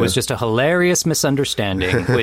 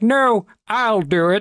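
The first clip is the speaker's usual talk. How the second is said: very high, slow, terrible frog-puppet voice; 11 semitones higher than usual. Imagining Kermit volunteering for the tentacle experiment, Kermit the Frog voice. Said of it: "continued use of your Kermit voice".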